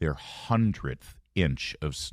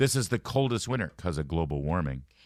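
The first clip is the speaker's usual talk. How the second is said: ordinary delivery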